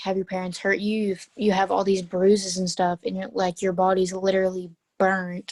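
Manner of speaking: ordinary delivery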